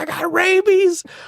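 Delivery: very high, shrill, all-out top-of-the-lungs scream. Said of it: "He screamed at the top".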